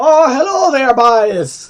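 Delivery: put-on very loud, high Irish brogue, boys stretched. Joking about how a word sounds, saying it in an Irish accent. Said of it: "like with an Irish accent".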